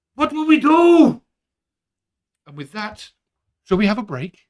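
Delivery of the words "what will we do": shrill, high-pitched, loud raised voice. Voicing a guard who bursts in to report: voicing a guard. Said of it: "He bursts in and he's like".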